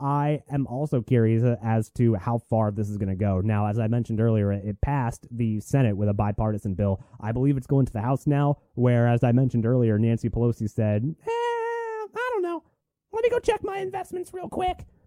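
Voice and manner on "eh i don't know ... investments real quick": very high put-on voice with long drawn-out I. Imitating Nancy Pelosi answering about a bill going to the House: Nancy Pelosi voice. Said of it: "That's my best Nancy Pelosi voice".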